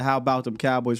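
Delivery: plain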